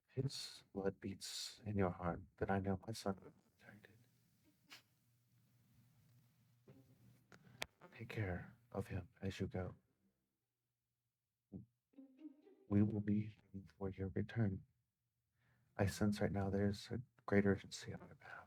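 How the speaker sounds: close, soft, hushed half-whisper. A mother pulls you into a hug and speaks into your ear, half-whispering. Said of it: "And she whispers into your ear".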